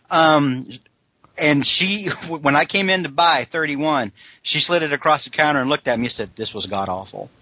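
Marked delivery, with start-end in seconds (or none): 6.3-7.2 muttered under breath, lower and quieter. Retelling what the woman at the counter said to the speaker; under her breath. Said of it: "she said it real under her breath".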